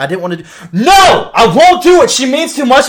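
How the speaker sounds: shrill yell climbing very high and very loud. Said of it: "he's yelling at the cat".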